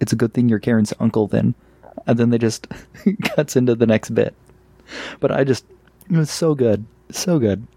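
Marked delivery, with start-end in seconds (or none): none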